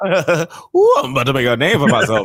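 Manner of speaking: put-on Louisiana Cajun accent character voice. Mimicking Channing Tatum's cameo line, in Gambit voice. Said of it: "Why you sound like Gambit right now?".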